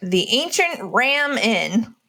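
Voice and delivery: over-the-top American pronunciation. Reading out the next name on the list in an exaggerated American accent. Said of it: "I said it in the most American way possible".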